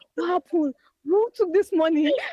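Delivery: mock, loud, high, furious angry yelling. Retelling waking to an alert about money deducted, reenacting an angry shout. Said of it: "I was angry. I shouted".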